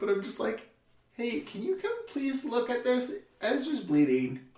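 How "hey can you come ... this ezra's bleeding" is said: breezy, unbothered, high sing-song casual tone. Retelling calmly asking for help while her brother bleeds, retelling a calm casual request. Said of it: "why are you not panicking and screaming".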